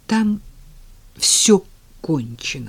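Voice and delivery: words forced out with difficulty, strained effort. Zhenya, after Tanya pulls her hand away, forces the words out with difficulty. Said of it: "с трудом выдавил из себя Женя".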